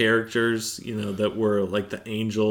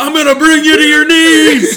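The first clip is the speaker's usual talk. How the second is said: mock shouting, higher and louder; 17 dB louder than usual. Imagining pastors from other churches charging down the aisle: imitating a shout. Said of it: "And they're shouting".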